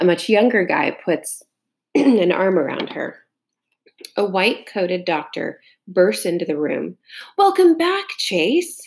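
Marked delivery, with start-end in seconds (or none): 7.4-8.8 very high, exclaiming, calling out. A doctor bursts into the room and greets the patient Chase, exclaiming. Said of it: "he exclaims".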